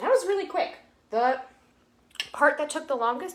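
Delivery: talking with mouth full. Eating the chicken they just cooked on camera, talking with mouth full. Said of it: "excuse me for chewing with my mouth open talking".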